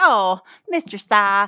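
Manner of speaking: put-on country-and-chummy southern accent. Retelling how another man addressed Cy on the stand, fake southern accent. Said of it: "he has this like fake southern accent".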